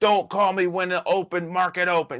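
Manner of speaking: mock mad, high-pitched angry screaming. Retelling how a trader screamed at the camera: imitating someone screaming. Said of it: "he's screaming at the camera".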